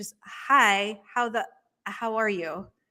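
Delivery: very slow, careful, deliberate wording. Showing how she talks around her nieces and nephews, speaking very slowly. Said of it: "I have to speak very slowly".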